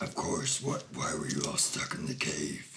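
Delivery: deep, rasping troll voice. A mountain troll talking with the group who were stuck in a cave: Gordon the mountain troll voice. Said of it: "[name] the Mountain Troll just effortlessly starts moving these boulders, / He's a big boy. / It's why I live in the mountains. / Like something raspier, deeper".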